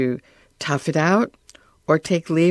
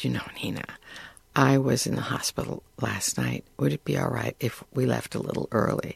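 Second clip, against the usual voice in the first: very quiet, soft, almost whispered; 4 semitones lower, 8 dB quieter than usual. Retelling what a woman said to the speaker after dinner, very quietly. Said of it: "she said to me very quietly".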